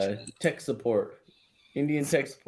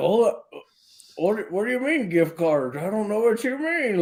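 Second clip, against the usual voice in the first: put-on very high, helpless old-lady voice; 9 semitones higher than usual. Tell friends how he pretends to be someone old, in Kitboga's helpless old lady voice. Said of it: "pretends to be like an old helpless lady".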